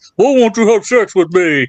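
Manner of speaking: cartoon character voice. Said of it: "if Becky Lynch is doing that Bullwinkle voice".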